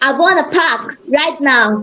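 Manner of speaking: attempted put-on New York accent. In an accent exercise, repeating a practice sentence in a new york accent. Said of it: "Now let's try this in a New York accent".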